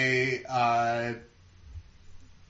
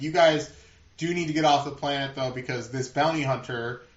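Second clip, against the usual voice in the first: ordinary delivery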